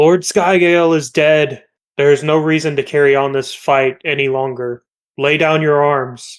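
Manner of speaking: big, loud, booming declaration. A player's character calls on enemies to end the fight: Chilo's booming voice. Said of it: "Chilo in a booming voice is going to say".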